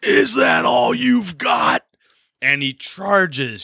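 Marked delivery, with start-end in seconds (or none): 0.0-1.8 very high, rough, drawn-out battle scream. Showing how a fighter charges a horde of giants: acting out a fighter's scream. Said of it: "your fighter stands up there and screams".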